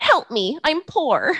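high, drawn-out movie voice. Giving a movie-quote clue in a voice: Kristen Wiig voice. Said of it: "I'm gonna do the voice again".

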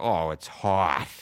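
put-on Boston accent with hot pronounced as hut. Showing one Boston way of saying hot: Boston accent, hot as "hut". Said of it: "there's the H U T".

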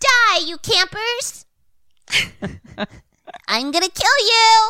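adult character voice pushed up very high. Voicing Jason threatening campers: adult Jason voice. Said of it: "Just adult Jason's voice".

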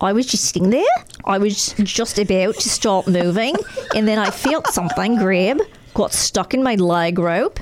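put-on Aussie-accented reading. Reading a news story aloud, the speaker quotes the Australian in an Australian accent. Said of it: "Do you want me to read this in an Australian accent?".

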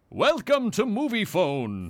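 put-on, swooping movie-announcer voice. Asked to say the greeting in the Moviefone voice, as the Moviefone voice. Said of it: "Like in the Movie Phone voice?".

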